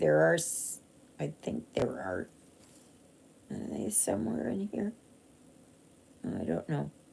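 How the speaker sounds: soft, half-whispered mumbling. Talking to viewers, breaking off to look for something, mumbling to self. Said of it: "just mumbling to myself".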